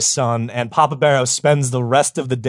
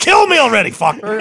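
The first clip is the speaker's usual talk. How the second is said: put-on shrill, loud scream; 9 semitones higher, 5 dB louder than usual. Retelling how the other speaker interrupted him: imitating someone screaming.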